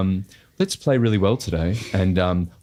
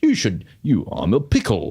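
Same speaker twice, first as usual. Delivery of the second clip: put-on swooping sing-song commercial advert voice. Quoting a line from an ad he appeared in: imitating his own AHM ad voice. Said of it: "Do you know that one?".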